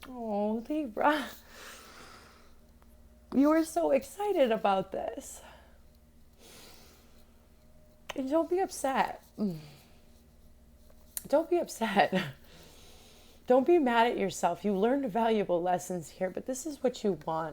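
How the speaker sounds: on the verge of crying. Giving a tarot reading for Libra, almost in tears. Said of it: "I'm almost getting tears".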